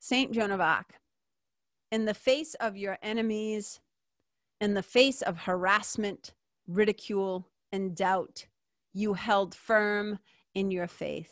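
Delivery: slow, unhurried, measured, deliberate reading aloud. Speaker reads a text aloud to listeners, taking a breath to read slowly. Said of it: "I'll read it slow".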